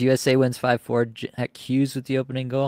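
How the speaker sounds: usual speaking voice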